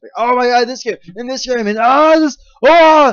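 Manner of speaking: very loud, very high, shrill, pumped-up yell. Speaker gushing about E3 games, suddenly slipping into an Arnold Schwarzenegger voice. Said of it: "I'm Arnold Schwarzenegger suddenly".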